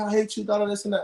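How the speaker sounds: ordinary delivery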